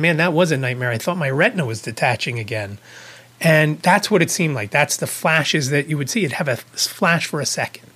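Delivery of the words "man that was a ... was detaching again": ordinary talk, nothing marked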